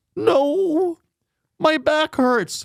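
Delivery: tearful crying voice, very high, slow, drawn out. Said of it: "she's already crying".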